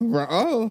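high-pitched cartoon dog voice. Retelling a scene where a dog is asked to attack: Scooby-Doo voice. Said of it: "And then he's like".

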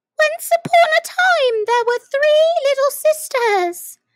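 rushing start, very high and loud. Asked for a story, the speaker begins telling it in a great hurry. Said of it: "the Dormouse began in a great hurry".

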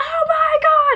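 mock very high, thrilled, excited shriek. Recounting a concert set, the speaker acts out their own reaction, retelling a scream. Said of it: "I'm screaming".

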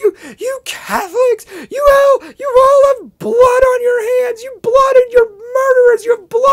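put-on very high, very loud screeching sobs. Retelling what a woman said to her: imitating screechy weird crying. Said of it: "screechy, weird crying".

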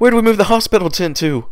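panicky, plainly alarmed, high and loud delivery. Narrator reading another pony's answer during an emergency, panicked voice. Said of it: "another panicked voice answered".

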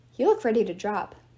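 ordinary delivery

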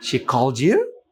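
statement with rising question intonation on you. Intonation lesson, statement asked as a question, rising tone on 'you'. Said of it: "statement যখন কোয়েশ্চেনের মতো হয় তখন সেটা rising টোন।".

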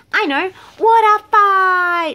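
very loud, high-pitched, drawn-out shout. Narrating an animal story, one friend shouts a suggestion to the others: shouted. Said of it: "shouted Monkey".

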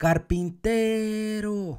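called out loudly, carpintero stressed on te. Finding the stressed syllable by calling the word like a friend: call out carpintero, stress on te. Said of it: "Le grito como que si fuese mi amigo ... La fuerza está en T".

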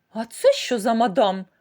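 loud, put-out, disapproving, displeased tone. Matilda notices Kilka and asks about her, displeased. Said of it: "невдоволена спитала Матильда".

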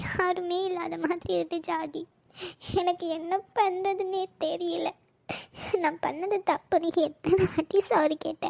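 soft, slow, tearful, hurt voice. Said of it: "அழுகாதடி பைத்தியக்காரி".

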